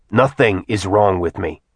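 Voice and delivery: ordinary delivery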